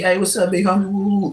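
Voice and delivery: ordinary delivery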